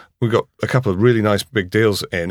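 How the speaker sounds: usual speaking voice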